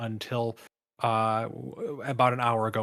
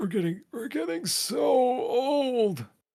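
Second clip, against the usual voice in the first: put-on old man voice, pitched way up, very high; 3 dB louder than usual. Closing a podcast episode, the co-host answers in an old man voice. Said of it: "it's a very good old man voice".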